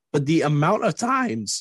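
voice breaking and cracking mid-phrase. Making a point to the other speaker, the voice cracks mid-sentence. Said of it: "what a voice crack that was".

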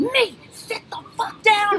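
high, drawn-out shriek pitched way up. Retelling how they ordered a man into a chair: retelling screaming at someone. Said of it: "I started screaming".

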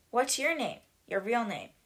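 ordinary delivery

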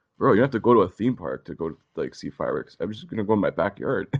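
ordinary delivery

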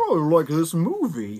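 very slow character voice, every word stretched out. Imitating a movie creature's voice after asking to talk like Elmer: Elmer voice. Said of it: "I could just talk like Elmer".

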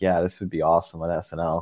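put-on flat deadpan delivery. Recalling a joke TikTok they made, the speaker quotes themself: retelling in deadpan. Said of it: "in my, like, deadpan".

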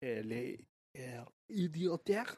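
slow, soft French accent. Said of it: "would you say that in a French accent".

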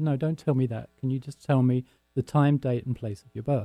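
ordinary delivery

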